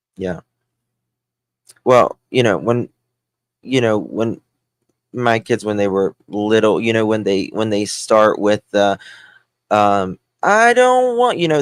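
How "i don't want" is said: mock whiny kid voice, higher and louder. Retelling what young kids said when upset: imitating a whining child. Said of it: "that kind of whiny".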